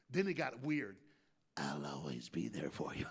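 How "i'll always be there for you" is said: very low, hushed, creepy spooky voice. Retelling what a man said when it got weird, in a scary voice. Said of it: "That's scary voice".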